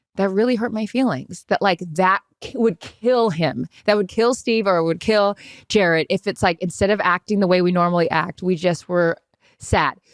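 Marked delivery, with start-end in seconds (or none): 0.2-1.5 soft, quiet, tender, sweet, hurt, sensitive voice. Podcast host demonstrating how they were told to speak, in a quiet, sweet, sensitive voice. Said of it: "in a quiet, sweet, sensitive voice".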